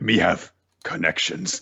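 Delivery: low put-on voice. Answering a question about getting cookie pizza, in a low voice. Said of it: "Why are you saying that in your low voice?".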